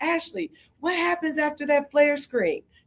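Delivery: very high yelling scream. Retelling calling out across the court at practice: imitating a scream across the court. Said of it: "I'll scream across the court".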